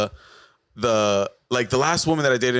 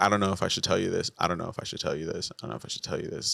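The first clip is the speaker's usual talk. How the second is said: hesitant words, lower and quieter; 5 semitones lower, 9 dB quieter than usual. Retelling how a date hesitated before sharing something: imitating hesitant speech. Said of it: "hesitant to tell me this very vulnerable thing".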